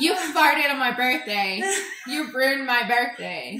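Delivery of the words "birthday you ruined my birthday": normal talking voice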